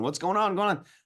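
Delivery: high, panicked freak-out. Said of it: "a lot of people freaking out".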